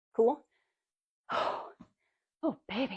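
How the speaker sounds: out of breath. Explaining a squat after demonstrating it, out of breath. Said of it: "I'm out of breath".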